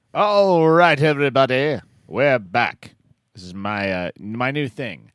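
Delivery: aristocratic mid-Atlantic accent. Radio poetry show host returning from a break: mid-Atlantic accent. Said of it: "I'm trying to use my Atlantic accent".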